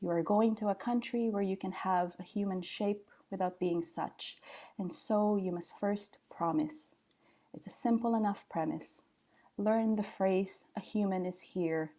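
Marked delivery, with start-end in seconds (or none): none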